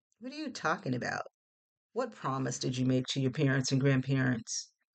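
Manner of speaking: plain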